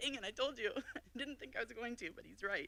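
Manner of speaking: high, choked-up voice on the verge of tears. Talking about their mom as an inspiration in college, choking up. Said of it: "sorry, I'm gonna cry".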